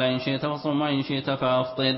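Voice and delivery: ordinary talk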